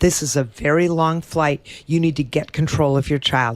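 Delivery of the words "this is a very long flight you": plain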